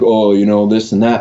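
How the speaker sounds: ordinary delivery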